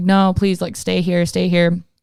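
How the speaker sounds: insistent, urgent, pleading begging. Retelling begging him to stay the night: retelling own begging. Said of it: "I'm, like, begging him".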